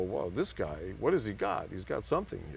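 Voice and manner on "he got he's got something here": normal talking voice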